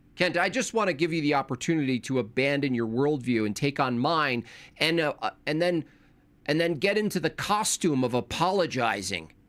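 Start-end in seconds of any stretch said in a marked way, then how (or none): none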